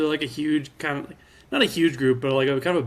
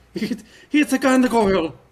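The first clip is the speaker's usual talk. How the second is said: put-on Irish accent, higher; 8 semitones higher, 3 dB louder than usual. Prompted to do their best Irish accent on the spot, speaking in an Irish accent. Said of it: "do your best Irish accent".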